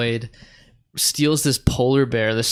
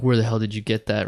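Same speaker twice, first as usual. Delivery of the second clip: usual speaking voice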